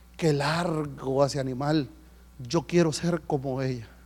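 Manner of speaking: slow, thoughtful musing, as if to oneself.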